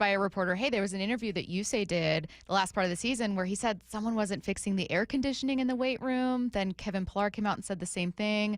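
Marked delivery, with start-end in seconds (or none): none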